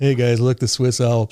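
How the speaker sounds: put-on joking, jokey tone. Retelling how they pointed out the swiss alps after many takes: imitating a joking remark. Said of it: "jokingly, they're going like".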